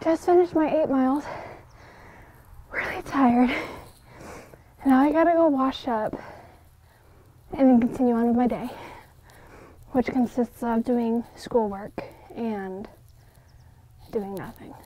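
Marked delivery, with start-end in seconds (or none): 0.0-3.5 breathless, winded, out-of-breath delivery. Just finished eight miles, telling the listener: out of breath. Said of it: "I'm out of breath".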